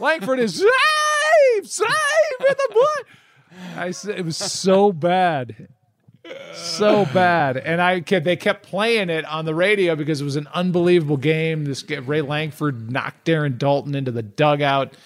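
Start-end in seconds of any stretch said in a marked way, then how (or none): 0.0-3.1 put-on very high, slow cracking yell like an eleven-year-old. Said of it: "it's exactly what it was".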